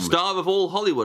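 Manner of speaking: ordinary talk, nothing marked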